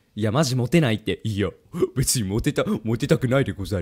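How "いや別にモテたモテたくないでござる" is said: put-on nerdy otaku voice, lower, quieter. The speaker asks to imitate an otaku making excuses, then does it, imitating a nerdy otaku. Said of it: "オタクの真似していい？".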